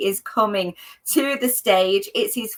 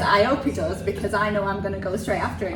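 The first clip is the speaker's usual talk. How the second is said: normal talking voice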